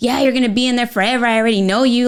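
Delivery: exasperated, fed-up, nagging, knowing voice. Acting out a stressed partner snapping at a spouse who just got home: imitating a mad, fed-up spouse. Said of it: "I'm gonna do that voice 'cause I know that voice".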